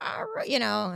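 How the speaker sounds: put-on high old man voice. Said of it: "I'm doing an old man voice".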